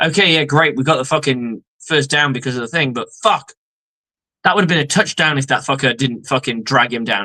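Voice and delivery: ordinary delivery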